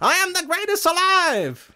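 very high, slow, boastful, taunting tone. Retelling a boxer taunting his rival outside his house: Muhammad Ali taunting voice. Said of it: "you know how he talked back then?".

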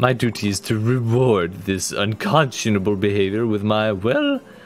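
stuck-up, snooty, haughty, superior tone. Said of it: "She is very snooty".

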